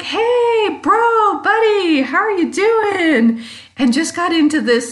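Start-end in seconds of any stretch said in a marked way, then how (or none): 0.0-3.4 high, loud, extremely joyful voice. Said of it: "extremely joyful conversation".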